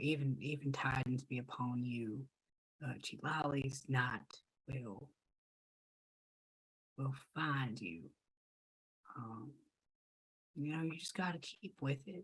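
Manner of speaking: hushed, barely audible, very soft half-whisper. Voicing preacher Harcourt half-whispering to a sad individual: preacher Harcourt half-whispering. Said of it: "as he's whispering to the individual".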